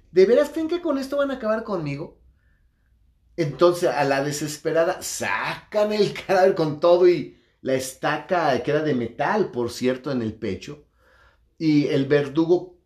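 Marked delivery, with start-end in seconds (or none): 0.1-2.1 mock, high-pitched, rapid, scoffing jeer. Retelling how he laughed at those trying to finish him off: retelling a mocking taunt. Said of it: "se burló".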